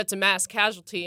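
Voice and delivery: ordinary talk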